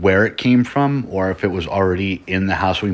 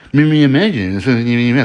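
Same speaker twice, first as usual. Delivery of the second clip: high, taunting, mocking echo; 5 semitones higher, 4 dB louder than usual. Retelling a ghost story, imitating a voice mocking from the garage. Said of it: "just mocking them every single time".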